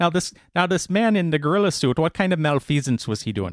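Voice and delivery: put-on almost-Irish accent. Asking about the man in the gorilla suit: accent sounding almost Irish. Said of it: "That sounded, like, Irish almost".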